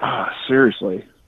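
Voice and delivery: put-on muttering under the breath. Retelling how she reacted on the phone: imitating someone muttering under her breath. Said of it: "I heard her under her breath going".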